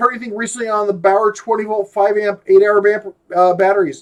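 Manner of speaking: ordinary delivery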